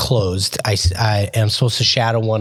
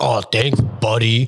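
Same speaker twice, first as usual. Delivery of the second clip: condescending, patronizing, talking-down tone. Showing the tone their thanks did not have: condescending. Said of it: "like condescending".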